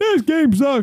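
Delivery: put-on very high, grumbling old-man voice. Voicing Grandpa coming in to complain about the game: Grandpa Simpson voice. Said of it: "that's Grandpa coming in going".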